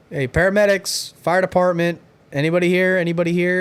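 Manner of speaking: mild, called-out voice. Retelling walking into a silent house and calling out: imitating own yelling. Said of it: "again, yelling".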